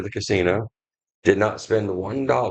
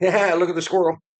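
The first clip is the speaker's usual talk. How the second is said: very high, scatterbrained, easily distracted outburst; 10 semitones higher, 3 dB louder than usual. Teasing the other speaker for getting distracted: imitating a distracted listener. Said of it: "you're like".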